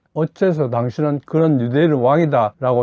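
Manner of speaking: plain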